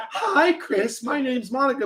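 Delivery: put-on woman's voice, high, slow and drawn-out. Joking that the other speaker's voice turned into someone else: imitating a friend as a woman. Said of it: "your fucking voice just changed into a woman".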